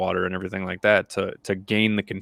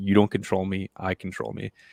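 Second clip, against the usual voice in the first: mock whispering; 4 dB quieter than usual. Retelling the mantra said during meditation: retelling a whispered mantra. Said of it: "I whisper".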